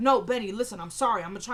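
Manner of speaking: normal talking voice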